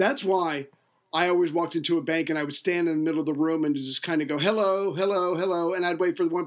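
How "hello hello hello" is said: put-on voice with Yiddish-inflected accent.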